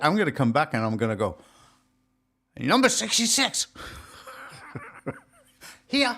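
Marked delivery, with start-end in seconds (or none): 2.6-6.2 fake Chinese accent with very high pitch. Joking about people who go abroad and come back talking differently, put-on chinese accent. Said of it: "start actually talking with a Chinese accent".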